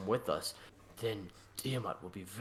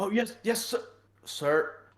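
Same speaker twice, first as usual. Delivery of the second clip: shrill, startled, high, drawn-out voice; 11 semitones higher, 7 dB louder than usual. Game master voicing characters caught away from where they should be: startled. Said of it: "they look startled".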